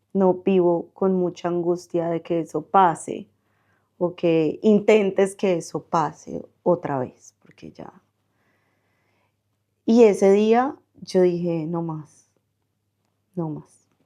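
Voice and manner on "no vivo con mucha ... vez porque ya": ordinary talk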